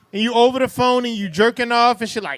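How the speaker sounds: normal talking voice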